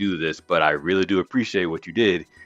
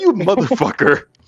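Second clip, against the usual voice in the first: very high, pissed-off, furious voice; 13 semitones higher, 4 dB louder than usual. Imagining her reaction to his interview answer, the speaker acts out a mock-furious outburst. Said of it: "I would be pissed".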